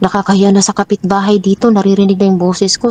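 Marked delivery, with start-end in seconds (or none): none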